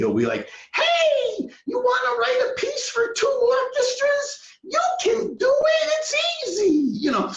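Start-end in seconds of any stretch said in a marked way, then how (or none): 0.7-7.0 very high excited cartoon cat voice, "hey" stretched. Retelling how John talks when excited: imitating John's excited Felix the Cat voice. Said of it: "his voice has, like, this Felix the Cat thing".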